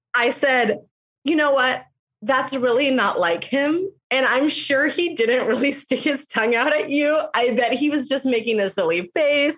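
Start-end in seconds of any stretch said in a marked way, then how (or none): 1.3-9.6 words broken up by giggles, talking through laughter. Retelling what was said to a teacher, laughing while talking. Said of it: "I can't even get this out without laughing".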